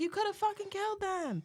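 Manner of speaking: put-on woman's voice screaming, shrill, pitched way up. Retelling a near miss on the sidewalk: imitating a woman screaming. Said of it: "I can hear the lady in the car screaming".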